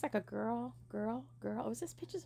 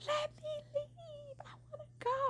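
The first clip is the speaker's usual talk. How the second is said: mock very high, slow, drawn-out sobbing scream. Recounting a man refusing to let them leave: reenacting screaming and crying. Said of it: "I was screaming and crying".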